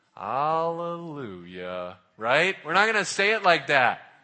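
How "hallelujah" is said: low, sad, gloomy, miserable-sounding voice. Showing how not to say Hallelujah, in a sad Eeyore voice. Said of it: "like Eeyore, you know, like all sad".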